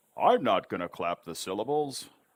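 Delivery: ordinary delivery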